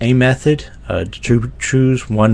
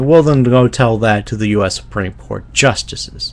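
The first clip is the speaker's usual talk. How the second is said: ordinary talk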